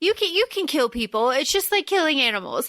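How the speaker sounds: plain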